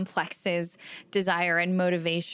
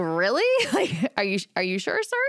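incredulous, swooping, half-laughing disbelief; 3 dB louder than usual. Retelling their reply to a man over their flagged chart, retelling a laughing disbelief. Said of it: "I just like kind of laughed".

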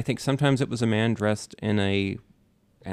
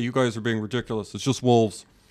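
put-on angry scientist voice. Imitating Carl Sagan dismissing a wild theory, mock-angry. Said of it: "he would get really mad about it".

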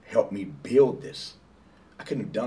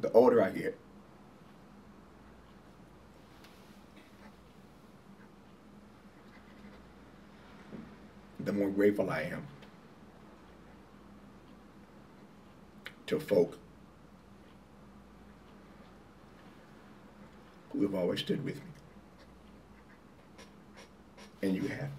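moved, emotional, much quieter voice; 10 dB quieter than usual. Speaking to someone who has always stood with you, getting emotional. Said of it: "I'm about to get emotional again".

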